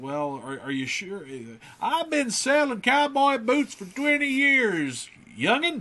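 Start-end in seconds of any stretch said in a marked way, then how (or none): 1.8-5.8 put-on raised, very high-pitched old prospector voice. Retelling a cowboy boot shopping trip, the speaker does an old prospector voice. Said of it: "Now he's sort of an old prospector".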